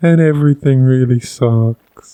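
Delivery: weak, puny, spineless little worm voice. Describing how a character talked as a little worm: Jerry worm voice. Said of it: "I just think it talks like this".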